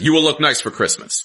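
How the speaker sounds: acted, adamant, very high, angry insistence. Retelling what the woman cutting her hair said during the haircut, mock-angry and adamant. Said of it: "Her tone is like so angry and so adamant".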